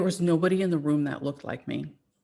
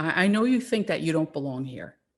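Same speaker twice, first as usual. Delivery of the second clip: put-on heavy New York accent. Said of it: "she had a heavy New York accent".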